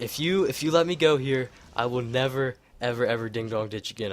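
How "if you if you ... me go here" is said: usual speaking voice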